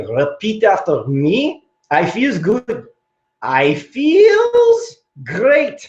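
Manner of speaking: put-on ridiculous accent, very slow, drawn out, swooping up. Retelling a visit to a nursing home in a doctor costume: ridiculous Doctor Feels Good accent. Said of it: "I had this ridiculous accent".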